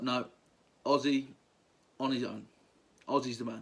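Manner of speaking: normal talking voice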